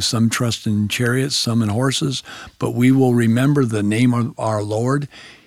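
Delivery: plain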